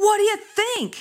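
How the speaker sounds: mock very high-pitched, very slow, drawn-out yell. Retelling a park encounter, imitating a woman shouting back. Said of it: "she shouted back".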